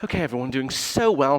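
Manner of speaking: put-on, condescending, patronizing fitness-teacher voice. Leading a stretching routine, switching to a patronizing Pilates instructor voice. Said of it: "in my patronizing Pilates voice".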